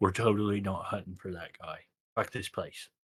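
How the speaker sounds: hushed, quiet half-whispered aside. Half-whispering in character to a companion while leaving town: half-whispering in character. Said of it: "I'm gonna whisper to Cha".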